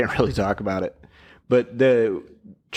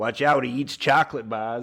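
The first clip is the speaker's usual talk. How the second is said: put-on Boston accent. Quoting a line from the movie in a Boston accent. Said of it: "I don't know why I did that with a Boston accent".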